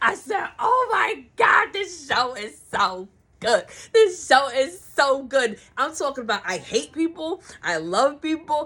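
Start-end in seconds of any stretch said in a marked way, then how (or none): 0.6-5.6 mock tearful, weepy, sobbing crying gush. Retelling own reaction to the show: imitating own crying. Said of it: "I was in here crying".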